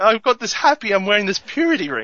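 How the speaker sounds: mock weepy, overjoyed, swooping, tearful happy gushing. Retelling a scene where a daughter gets a purity ring: imitating happy crying. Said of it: "She starts crying, and she's, like, really happy".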